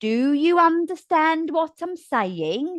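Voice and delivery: sarcastic, words stretched. Teaching voice delivery, showing what not to do: slow, sarcastic tone. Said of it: "Don't sound sarcastic by slowing everything down and going".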